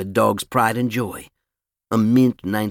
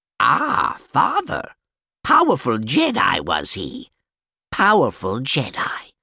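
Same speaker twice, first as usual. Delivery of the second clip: croaking, swooping up-and-down little creature voice; 4 semitones higher than usual. A character in the story frowns, then answers in a croaking Yoda impression. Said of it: "with a spot-on Yoda impression, he croaked".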